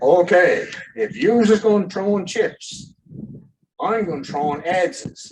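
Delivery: great big hefty booming voice, loud and high. Retelling a man turning around on people throwing chips, in his big voice. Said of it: "with the big voice he had".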